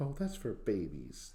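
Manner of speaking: fake old grandmother voice. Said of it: "very authentic grandma type".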